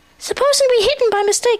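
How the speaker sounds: fretful, anxious, very high. One friend responds to the group's plan, speaking anxiously. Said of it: "said Piglet anxiously".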